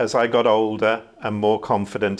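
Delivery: ordinary talk, nothing marked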